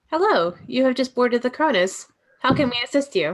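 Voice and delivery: robotic, mechanical computer voice. Repeating the welcome message aboard the Cronus, speaking in a robot voice. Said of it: "I am a robot voice".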